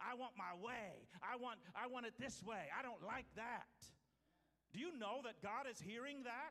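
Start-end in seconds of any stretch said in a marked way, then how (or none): 0.0-3.7 put-on petulant, whiny, complaining cry-baby voice. Telling listeners that God hears their cries: imitating a complaining voice. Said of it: "It includes the complaining voice".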